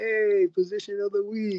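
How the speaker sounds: high-pitched yell.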